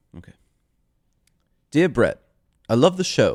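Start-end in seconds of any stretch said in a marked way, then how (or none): 1.7-3.4 put-on, sing-song English accent. Reading aloud a mailed letter on the show, in an English accent. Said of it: "should I do this in like an English accent?".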